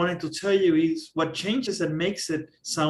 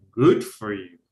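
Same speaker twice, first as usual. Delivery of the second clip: loud, dry, pointed sarcastic tone; 9 semitones lower, 5 dB louder than usual. Responding to someone going on vacation without you, in a sarcastic tone. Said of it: "I can be sarcastic".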